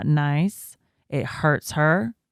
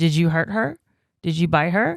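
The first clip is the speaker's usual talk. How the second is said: firm, direct voice. A mother re-enacting how she questioned her child over the crying baby, retelling a firm voice. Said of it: "I was just real firm".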